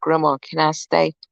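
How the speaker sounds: put-on whisper. Retelling asking her grandmother if she can stay: imitating a whisper. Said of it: "I go whisper in her ear".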